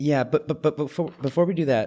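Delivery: stammering at the start, repeating words. A host, apologizing to listeners, trips over words before moving on: stuttering. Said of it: "I'm stuttering over here".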